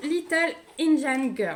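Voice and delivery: put-on, self-mocking English accent. Showing a painting to viewers, reading its English title in a put-on English accent. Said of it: "Avec mon magnifique accent anglais".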